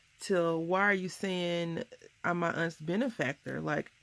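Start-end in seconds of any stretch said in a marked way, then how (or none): none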